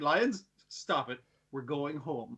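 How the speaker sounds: slow, regal, commanding, kingly delivery. Retelling how a character sends the lions home, imitating a kingly manner. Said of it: "in a kingly way".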